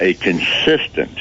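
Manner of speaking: consistent drawn out, slow, heavily emphasized.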